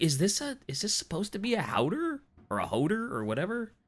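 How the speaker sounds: put-on soft, high Canadian-sounding accent. Retelling his own question about a word, sounding Canadian. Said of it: "you sound so Canadian every time".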